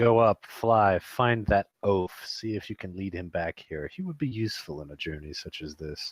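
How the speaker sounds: soft, hushed half-whisper. Player voicing Tim in a role-playing game, speaking to Poe, half-whispering. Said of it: "He whispers to Poe".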